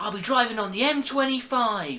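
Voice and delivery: fake poor British accent. Mocking American actors playing British people: imitating Americans' bad British accent. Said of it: "bad accents".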